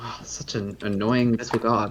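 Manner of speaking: low, hushed grumbling mutter under the breath. Following another character in a tabletop game, muttering under breath. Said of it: "under my breath say".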